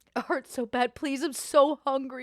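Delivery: tearful, crying, pleading voice. Voicing a character who suddenly switches mid-scene: crying. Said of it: "he immediately changes to like crying".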